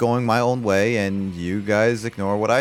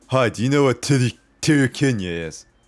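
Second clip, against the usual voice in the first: put-on drunk voice, slurred-sounding speech; 2 semitones higher than usual. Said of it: "kinda like in that kind of voice".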